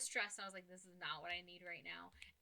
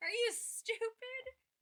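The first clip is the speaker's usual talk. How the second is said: mock very high, loud, lost-it angry outburst; 6 dB louder than usual. Retelling the moment they lost it, imitating an angry outburst. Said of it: "And that was when I lost it".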